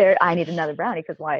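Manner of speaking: ordinary delivery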